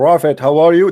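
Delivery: speaking loudly. Showing the wrong way to address the prophet, in a loud voice. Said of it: "You have to lower your voice".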